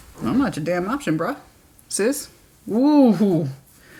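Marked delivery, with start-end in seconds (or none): none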